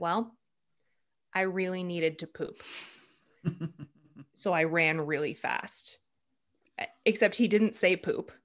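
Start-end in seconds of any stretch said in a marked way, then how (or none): 0.0-6.0 flat, expressionless, matter-of-fact deadpan voice. Retelling a runner's answer to an interview question about his time: imitating a deadpan answer. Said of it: "he just like deadpan was like".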